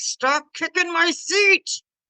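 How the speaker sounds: grumbling growl. Retelling what they told a child: imitating a growl. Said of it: "that's a growl".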